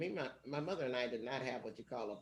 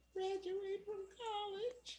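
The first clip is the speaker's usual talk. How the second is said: put-on very high, tiny, babyish little voice. Recalling her answer when asked what she hadn't done, in a little baby voice. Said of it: "this little baby voice I said".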